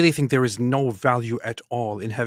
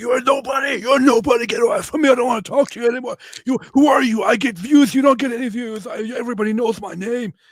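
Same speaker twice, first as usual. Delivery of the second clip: very high, loud, angry, arrogant shouting; 12 semitones higher, 5 dB louder than usual. Retelling how he started shouting at you before you answered him, imitating someone shouting at me. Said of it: "he starts shouting at me like".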